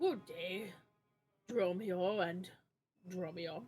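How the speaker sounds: very slow, drawn-out cartoon donkey voice. Voicing the donkey librarian greeting two visitors: voicing the donkey librarian. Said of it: "who's gonna do the voice of".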